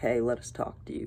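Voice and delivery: ordinary talk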